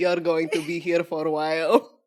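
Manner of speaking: put-on guard voice with a Russian accent. Giving a default accent sentence: Tina Fey Russian prison guard voice. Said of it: "So my default sentence is".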